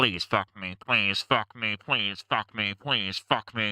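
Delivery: tiny, little space-creature voice. Describing a gray alien appearing in the room at three in the morning, little alien voice. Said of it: "it says with with this little alien voice".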